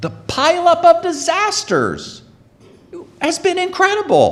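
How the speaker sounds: very high, whiny, put-on sing-song voice. Remarking to listeners on the pileup of disasters: mock whiny tone. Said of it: "Did you hear the whininess in my voice?".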